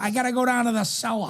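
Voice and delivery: imitated old-school Boston accent. Comparing someone's accent to the speaker's grandma, imitating grandma's old Boston accent. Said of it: "he just has this little drawn out".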